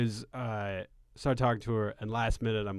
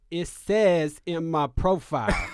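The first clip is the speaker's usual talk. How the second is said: put-on woman's voice, higher pitch; 6 semitones higher, 4 dB louder than usual. Acting out a woman's replies to a message, imitating the woman's voice. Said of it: "I'm gonna do it in her voice".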